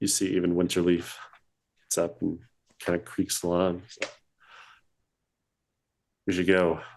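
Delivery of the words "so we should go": very low, deep, sunken-down voice. A game master voices a character after the group stands up, very low voice. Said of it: "he says in a very lower kind of voice".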